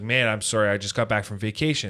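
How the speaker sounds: put-on nonchalant tone. Retelling what a bank employee said after vacation: imitating a nonchalant person. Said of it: "one of those people that was very nonchalant".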